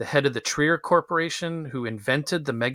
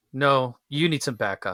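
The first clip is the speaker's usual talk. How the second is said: put-on deadpan movie-actor impression. Retelling a film scene where he insists to the cops in the car, deadpan Jon Lovitz impression. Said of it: "John Lovitz is so deadpan".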